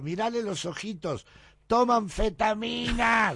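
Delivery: very high, shrill, drawn-out hollered yell. Telling a story, the speaker re-enacts someone who pointed at them, retelling a shout. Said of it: "le gritaba".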